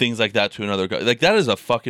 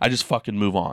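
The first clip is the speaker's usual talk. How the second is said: mock blunt, upfront, aggressive delivery. Quoting a man on moving past depression: imitating blunt aggressive talk. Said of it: "he'll say it in a way where he's a very".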